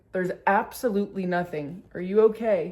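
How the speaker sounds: plain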